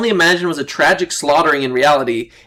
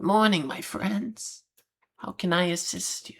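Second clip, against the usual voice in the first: put-on very soft, slow, hushed, whispered old-creature voice; 3 semitones higher, 13 dB quieter than usual. Game narrator voicing a tiny librarian greeting the party, slow librarian creature voice. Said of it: "She turns to look at you and speaks slowly".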